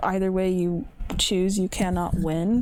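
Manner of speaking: ordinary delivery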